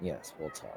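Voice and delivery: very quiet, softly spoken, hushed murmur. Answering thanks for returning his possessions, she replies very softly. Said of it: "very softly says".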